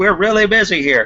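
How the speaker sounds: very high screaming. Giving the rundown, the speaker voices the man you get in touch with, screaming. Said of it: "he's screaming like he's like".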